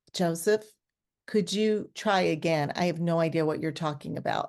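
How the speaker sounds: ordinary talk, nothing marked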